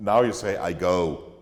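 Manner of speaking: ordinary talk, nothing marked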